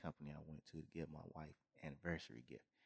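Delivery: hushed whisper. On a podcast, not wanting his wife to hear yet, whispering. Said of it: "I'm going to try to whisper this".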